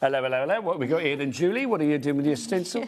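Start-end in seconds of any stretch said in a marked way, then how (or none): 0.0-1.7 put-on 1960s old-fashioned british police constable voice. Mimicking how policemen spoke in old police dramas, in an old British police constable voice. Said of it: "Policemen don't speak like that".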